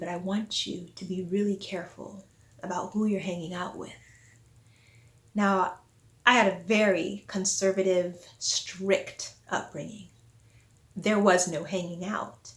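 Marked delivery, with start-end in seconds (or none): 0.0-3.9 lowered, confiding, cautioning teacher's voice. Retelling what a teacher said after class: imitating a lowered voice. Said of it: "she sort of lowered her voice and said".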